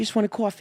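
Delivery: very high New York sitcom-style accent. Showing how people talk on Seinfeld: Seinfeld New York accent. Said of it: "how they talk in there".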